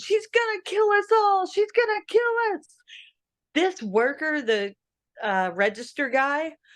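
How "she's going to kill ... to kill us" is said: screaming, pitched very high. Retelling filming a scene in a store: retelling a scream. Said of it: "And I started screaming".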